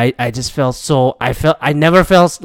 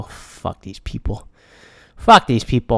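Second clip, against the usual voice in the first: angry, raging, furious outburst; 3 semitones lower, 4 dB quieter than usual. Retelling raging at roadside signs while driving: retelling own raging. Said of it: "I started raging".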